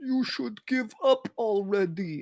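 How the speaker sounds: booming, projected down from above. Pretending to be God during a game roll, talking from above: booming God voice. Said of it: "I'm going to change my voice so it sounds more booming".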